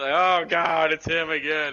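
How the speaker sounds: put-on sarcastic character voice. Explaining how a game character greets them, imitating Mirage talking sarcastically. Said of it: "He's just talking sarcastically".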